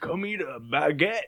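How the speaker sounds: imitated Southern accent. Imitating a character from Arkansas in Epcot-style France: southern accent. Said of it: "kind of a southern accent".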